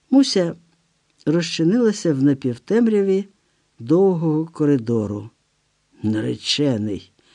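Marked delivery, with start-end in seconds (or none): 6.0-7.0 scornful, much lower pitch. After a woman leaves saying her fiancé is waiting, a man repeats the word contemptuously. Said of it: "зневажливо повторив Іполіт".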